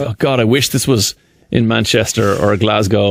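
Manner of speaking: usual speaking voice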